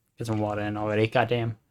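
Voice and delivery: ordinary talk, nothing marked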